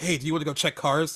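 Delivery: normal talking voice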